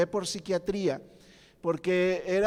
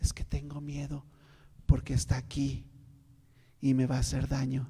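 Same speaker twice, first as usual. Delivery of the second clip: low, hushed undertone under the breath; 5 semitones lower than usual. Retelling what a person said in a low voice: imitating someone speaking quietly. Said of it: "empezaba a hablar en voz baja".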